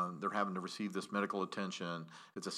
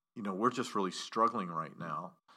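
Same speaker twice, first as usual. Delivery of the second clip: usual speaking voice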